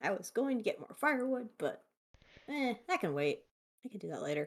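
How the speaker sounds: muttering under breath. Playing a game character who will get firewood later: muttering under breath. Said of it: "he probably mutters under his breath like that".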